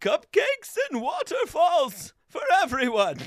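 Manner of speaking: overjoyed, gleeful villain voice with wide swooping pitch. Musing with friends on a cheerful version of a menacing villain: mock-joyful Bane voice. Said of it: "the idea of a joyful Bane".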